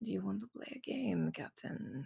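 soft, close, purring half-whisper. Tabby, sitting on the captain's lap, speaks into his ear: Tabby's purring half-whisper. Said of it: "she whispers purrs into his ear".

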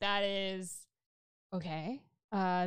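slow, drawn-out sarcastic "okay".

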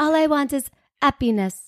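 put-on French accent, happiness without h. Quoting a woman who has a French accent: French accent, dropped h. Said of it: "She has a French accent and she's like".

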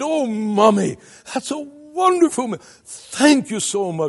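put-on high, squealing with childlike delight. Speaker picturing the Lord as a child thanking his mother for a meal, mock squealing with delight. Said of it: "squealing with delight".

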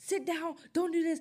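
very high, barking, scolding yell, acted out. Mocking a woman who used to yell at her and her sister, imitating her yelling. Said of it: "she'd be like yelling at us".

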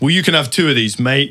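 acted loud, booming voice. Retelling Barclay's reaction to being made a coffee: imitating Barclay talking loudly. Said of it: "Barclay really loudly went".

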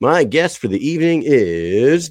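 put-on professional radio voice, slow and drawn out. Introducing the evening's guest, the host switches to his professional radio voice. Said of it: "that's my radio voice, everybody".

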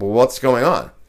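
ordinary talk, nothing marked

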